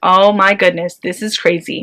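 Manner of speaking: ordinary talk, nothing marked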